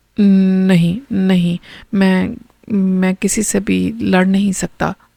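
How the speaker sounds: frightened stammer with stumbling, repeated words. Narrator reads a disciple's reply when asked if he will fight, stuttering. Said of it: "वो हकलाने लगा।".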